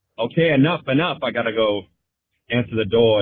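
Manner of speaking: normal talking voice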